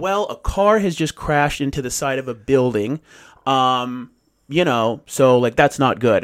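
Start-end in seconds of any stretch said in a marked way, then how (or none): none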